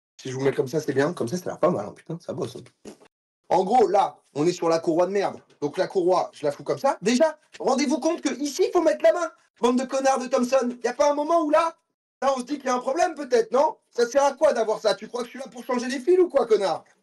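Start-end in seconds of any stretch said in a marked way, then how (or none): 9.6-16.8 heated angry outburst, higher. Struggling to fit a slack belt: losing temper angrily. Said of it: "Excusez-moi, je m'emporte".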